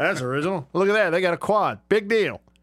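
unimpressed, cynical, sarcastic tone. Reacting to a campus description being read aloud, sarcastic. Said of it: "Now I'm starting to be cynical and sarcastic".

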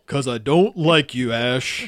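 voice dropped very deep. Imagining Pikachu speaking English and answering Ash, deep Pikachu voice. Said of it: "I was hoping it would be really deep".

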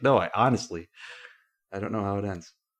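ordinary talk

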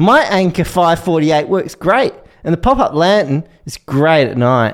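Australian accent from Queensland. Asked to read a camping product review aloud in an Australian accent. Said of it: "You do it in an Australian accent".

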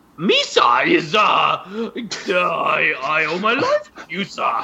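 very slow, drawn-out creature voice, swooping all over. Retelling a movie scene, quoting the rescued character: Jar Jar Binks voice sounding like Nute Gunray. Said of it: "you put Newt Gunray's voice into Jar Jar's voice".

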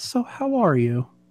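put-on soft, gentle Southern-accented voice. Acting out how Chuck asks you a question when you talk to him, in Chuck's therapist voice. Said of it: "in like a southern line".

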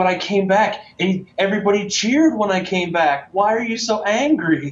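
mock very high, wounded, heartbroken voice. Act out the man who came back and won the match, imitating someone heartbroken. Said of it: "He was just heartbroken".

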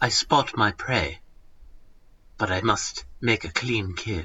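low, slow, unhurried nature-narrator voice. Reading a comic panel as asked: David Attenborough Garfield voice. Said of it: "This is the right voice".

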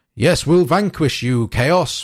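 huffing, puffing, blustering general voice. Comparing audiobooks, the speaker imitates a voice actor's take on a Stormcast hero: huffy puffy general. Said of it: "like that sort of huffy puffy general sort of thing".

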